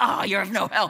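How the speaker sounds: mock sarcastic tone. Retelling a reply to mom's answer about prayer: retelling own sarcastic remark. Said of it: "It was sarcastic, yes".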